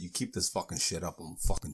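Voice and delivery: put-on seething, low, rushed, angry tone. Retelling what the speaker said to her after grabbing her: retelling an angry threat. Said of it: "it would get me mad".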